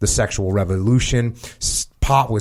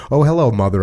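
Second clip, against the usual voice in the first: mock, syrupy, sugary-sweet voice. Retelling greeting a mother who caught them: imitating own sugary voice. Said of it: "I said in my sugary voice".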